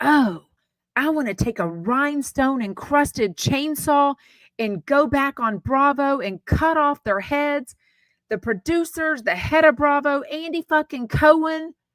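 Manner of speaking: mock diabolical, high-pitched, going-off rant. Retelling a podcast rant she heard: imitating Lisa Rinna's diabolical rant. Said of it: "the way she goes off was, like, diabolical".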